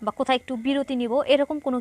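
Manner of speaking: ordinary delivery, nothing marked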